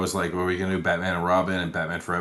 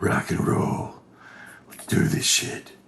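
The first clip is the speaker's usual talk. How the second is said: strained, voice-straining fake put-on voice. Opening a movie review with a voice-straining put-on voice. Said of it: "don't do that to your voice".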